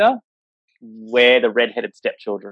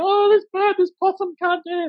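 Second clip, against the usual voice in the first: very high-pitched panicked shrieking cry. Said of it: "everyone else is panicking".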